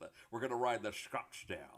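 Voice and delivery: put-on Scottish accent. A speaker retells how a friend talked about their SUV; perfect Connery accent. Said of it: "in the perfect Connery accent".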